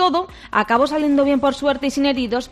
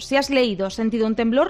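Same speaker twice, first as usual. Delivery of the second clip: ordinary talk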